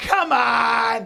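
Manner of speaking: mock offended, loud, rasping yell, "on" drawn out. Retelling what the woman next to them shouted, retelling a really loud shout. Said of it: "Like really loud".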